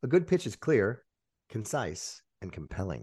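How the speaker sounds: pauses after "clear", "concise", "compelling", each set apart. Showing how a good pitch sounds: pauses between clear, concise, compelling. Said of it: "So there's just the perfect amount of pause between those three words".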